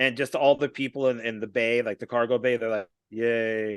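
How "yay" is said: mock flat, unenthusiastic "yay". Retelling a movie crowd cheering, imitating an unenthusiastic cheer. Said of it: "no enthusiasm in it whatso-, whatsoever".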